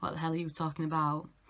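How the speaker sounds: ordinary talk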